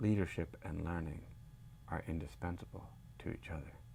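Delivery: near-whispered, lifelike humanlike AI voice. Showing how AI robots talk: AI robot voice. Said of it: "they talk like this".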